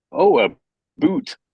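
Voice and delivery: put-on high Canadian accent, "about" as "aboot". Retelling how Americans tease Canadians: imitating Americans saying "a boot". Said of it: "Americans go".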